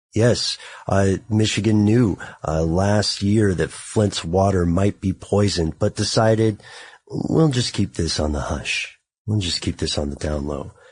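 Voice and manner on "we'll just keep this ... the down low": low, quiet storm late-night DJ radio voice. Speaker voices Michigan deciding to keep Flint's water risk hidden, quiet storm voice. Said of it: "You like how I'm going into my quiet storm voice?".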